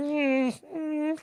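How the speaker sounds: put-on high cooing baby voice, pitched way up. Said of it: "he would be in this baby voice".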